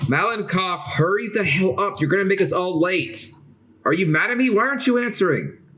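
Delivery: high-pitched, impatient, loud yell. Voicing an annoyed character calling through a door: shouting impatiently. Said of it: "as you hear her shout out".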